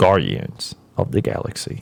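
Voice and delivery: put-on breathy, whispered seductive voice. Reading out a list of Marvel movie titles in a put-on sexy voice. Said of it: "I'm doing this in my sexy voice".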